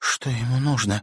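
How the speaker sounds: quavering, unsteady, trembling, shaky voice. Reading a story: a character standing near Timofey asks a question in a trembling voice. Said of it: "дрожащим голосом спросила".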